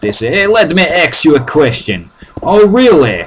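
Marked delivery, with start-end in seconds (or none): 0.3-2.1 put-on New Jersey accent. Describing guys from New Jersey, imitating how they talk, in a New Jersey accent. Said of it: "you get a lot of guys in New Jersey like that".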